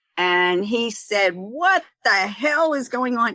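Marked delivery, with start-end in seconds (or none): 1.3-3.3 furious, angry raised voice, pitched high. Retelling a meeting, the speaker quotes a man they feared, retelling a raised voice. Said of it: "he raised his voice".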